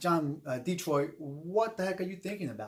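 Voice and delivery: ordinary talk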